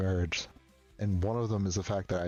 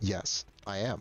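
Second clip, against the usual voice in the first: put-on monotone voice. Retelling a friend's answer to a question about liking guys: imitating a monotone reply. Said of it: "it was always just a monotone".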